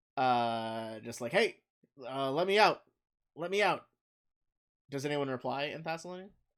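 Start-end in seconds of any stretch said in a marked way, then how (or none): 1.3-3.9 loud, raised shouting voice, calling out. Game master voicing a person inside a shaking sarcophagus, yelling. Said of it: "you hear the person uh is yelling".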